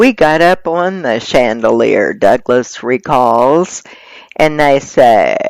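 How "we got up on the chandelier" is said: normal talking voice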